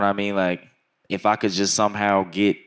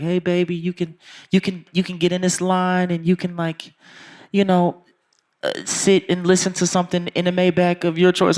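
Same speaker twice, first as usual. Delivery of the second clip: put-on sweet auntie voice, much higher; 10 semitones higher than usual. Retelling what a lady said when the speaker walked in, imitating a sweet auntie. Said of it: "really nice, sweet, like, auntie ass lady".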